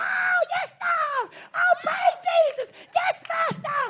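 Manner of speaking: very high, slow, drawn-out shout. Acting out a woman in church praising god: imitating a woman shouting praise. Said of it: "She's shouting all the time".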